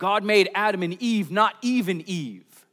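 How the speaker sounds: put-on condescending, talking-down shout, loud and high. Retelling a man with a sign yelling at two passing girls: retelling a condescending yell. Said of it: "this man yells out in this condescending voice".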